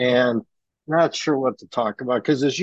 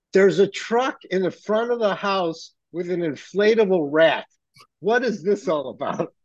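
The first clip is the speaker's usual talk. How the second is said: high-pitched, screaming voice; 6 semitones higher than usual. Telling a story about a non-union worker coming over, imitating Cheryl screaming. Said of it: "Cheryl starts screaming".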